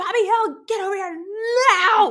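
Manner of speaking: very high-pitched, very loud screeching scream. Retelling a cartoon mother calling her son over: imitating Peggy Hill screaming.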